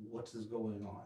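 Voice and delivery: hushed, low, very quiet voice. Stepping up to the doorway where he ran in, asking in a low voice. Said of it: "in a low voice go".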